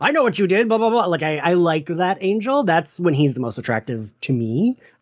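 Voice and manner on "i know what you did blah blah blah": full, high outburst pushed up into top voice. Retelling a scene where Angel throws the desk over: imitating Angel's top voice. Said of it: "when he uses his top voice".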